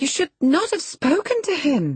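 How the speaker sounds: very high, swooping, protesting expostulation. She reproaches the young master for speaking to him, expostulating. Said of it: "she expostulated".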